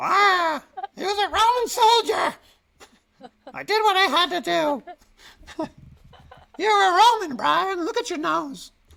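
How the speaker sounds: very high, loud, shrill voice. Fresh from watching Life of Brian, the speaker slips into Brian's mother voice. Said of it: "my voice is like going into the like Brian's mother's voice".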